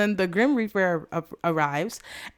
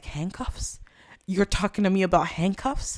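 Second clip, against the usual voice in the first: mock irate, angry voice. Retelling an irate character's retort: imitating an irate character. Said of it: "He's irate".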